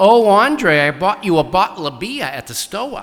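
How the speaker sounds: put-on strong Boston accent, very loud. Retelling what a woman would say when you went down there, in a strong boston accent. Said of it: "such a strong accent, a Boston accent".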